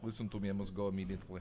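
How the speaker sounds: put-on low, fast, rattled-off Russian accent. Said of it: "I do, like, a decent Russian impression".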